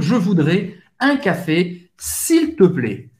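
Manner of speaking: casual informal tone, slow on "plaît". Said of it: "informal, com uma pessoa que você conhece".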